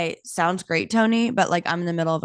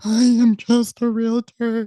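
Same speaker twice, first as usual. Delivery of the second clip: high, loud, play-acted tearful sobbing through words; 5 semitones higher, 5 dB louder than usual. Recounting what she told a kind man who saw her crying, retelling crying. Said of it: "he sees that I'm crying".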